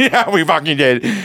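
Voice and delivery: high, nervous, mock laughing through the words. Retelling his own reply to a man who wouldn't let go of his hand: retelling a nervous laugh. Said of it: "I nervously laughed even harder".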